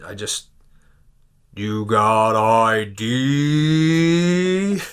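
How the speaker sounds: imitated slow speech. Retelling what the store guy said to him, imitating a slow voice. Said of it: "the you know the voice slow".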